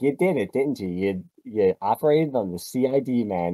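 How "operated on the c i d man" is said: ordinary talk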